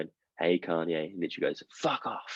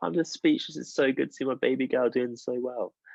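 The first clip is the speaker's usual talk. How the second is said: mock high, tearful voice, as if crying; 5 semitones higher than usual. Retelling a reality-show scene where a mother watches her daughter, imitating Kim crying. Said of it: "And Kim's just there crying".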